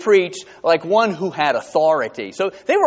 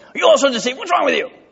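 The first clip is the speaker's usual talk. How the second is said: very high, sharp, snappy, irritable tone; 10 semitones higher than usual. Retelling a Bible passage, acting out the Pharisees' reply, mock-snappy Pharisees voice. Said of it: "You hear the snappiness of their voice".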